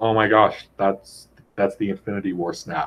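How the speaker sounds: ordinary talk, nothing marked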